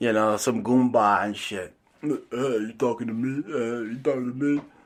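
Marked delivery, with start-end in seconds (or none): 2.0-4.6 gangster-film tough-guy manner. Mocking an actor's acting by quoting his line: Robert De Niro impression. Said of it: "Robert De Niro's a shitty actor".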